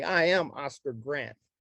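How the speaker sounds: usual speaking voice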